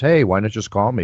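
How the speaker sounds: plain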